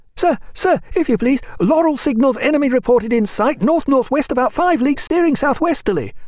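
excited, cracking youthful voice. Narrator reads a pale youth at the officer's side crying out, adolescent voice breaking with excitement. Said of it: "cried in an adolescent voice, breaking with excitement".

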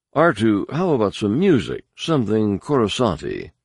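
usual speaking voice

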